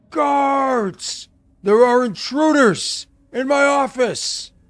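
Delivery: shouting. Voicing a character who flees through a door, calling out for guards. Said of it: "You hear him call".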